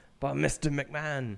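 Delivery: put-on botched Scottish accent. Quoting a line while admitting they can't do the accent, bad attempt at Scottish accent. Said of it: "I don't even know how to do the accent".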